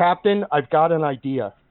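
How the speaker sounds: plain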